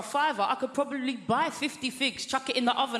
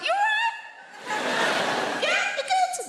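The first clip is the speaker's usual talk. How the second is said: very high, drawn-out, insincere, fake British politeness. Retelling greeting a stranger found on the speaker's sofa, in a high voice. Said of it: "when our voices go high like that".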